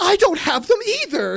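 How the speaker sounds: mock very high, loud, desperate, overacted delivery. Imitating an extra giving one line everything: imitating an overeager extra. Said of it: "an extra trying their hardest to be noticed".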